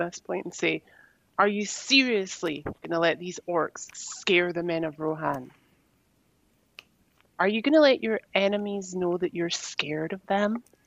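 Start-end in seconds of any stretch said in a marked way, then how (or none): 1.4-10.6 irritated, angry harangue building in intensity. Speaking in character to the men of Rohan about orcs, getting more angry. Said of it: "I then kinda get slightly a little bit more pissed".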